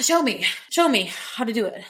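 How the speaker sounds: put-on overdramatic delivery. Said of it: "sounding overdramatic".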